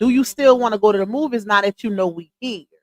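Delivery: ordinary delivery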